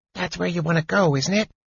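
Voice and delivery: loud, audible stage whisper. Narrating a story, a character turns to ask a companion, in a loud whisper. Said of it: "he asked in a loud whisper".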